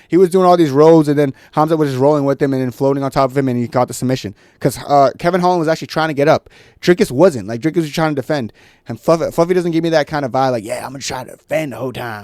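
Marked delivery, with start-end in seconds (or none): 10.6-12.2 put-on Texas accent. Voicing a fighter's imagined attitude about the fight: Texas accent. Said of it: "I'm talking in a t-, uh, Texas accent".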